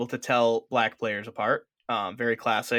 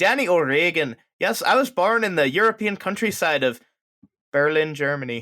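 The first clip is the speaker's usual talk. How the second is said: put-on convincing, higher-pitched Irish accent; 5 semitones higher, 4 dB louder than usual. Co-host joking about the name of a player they got, in an Irish accent as Danny O'Regan. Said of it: "That was a really good Irish accent".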